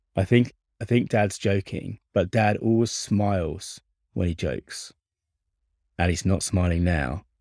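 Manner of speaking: normal talking voice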